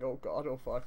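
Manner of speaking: plain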